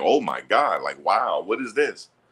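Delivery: stunned, marveling wonder, slow and drawn out. Retelling how the scouts reacted to the throws: imitating amazed scouts. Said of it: "They sit up there looking like".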